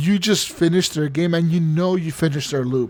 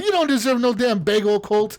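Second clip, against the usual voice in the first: acted mouthy, mean, high taunting voice; 6 semitones higher than usual. Retelling a game character mocking another player: imitating Juliana trash-talking. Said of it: "talking so much shit".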